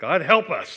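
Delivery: sudden, urgent, loud, high-pitched prayer voice. Retelling what the wife says when a car stops ahead: imitating a very loud, fast prayer. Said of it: "my wife will say a very loud, very fast prayer".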